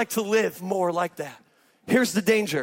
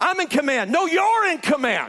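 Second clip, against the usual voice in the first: imitated yelling, higher pitch; 6 semitones higher than usual. Retelling a man on a bike yelling about who is in command: imitating a man yelling.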